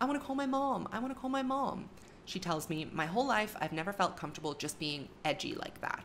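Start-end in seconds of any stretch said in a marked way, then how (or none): 0.0-1.9 very high, put-on panicked pleading voice. Retelling what she said at somebody's house, in a put-on panicked voice. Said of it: "she affected a panicked voice".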